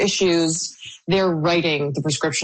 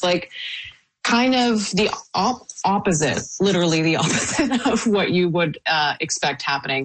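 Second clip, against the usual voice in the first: words broken up by laughter while talking; 3 semitones higher than usual. Reading out a report's findings on vendors, the speaker is laughing while talking. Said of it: "I'm sorry that I'm laughing".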